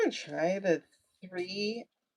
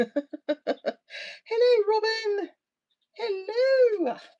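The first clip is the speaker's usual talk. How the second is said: put-on very high, elderly nanny voice; 14 semitones higher, 4 dB louder than usual. Breaking off a rant to throw in a greeting, as a Mrs. Doubtfire impersonation. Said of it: "Excuse my Missus Doubtfire impersonation".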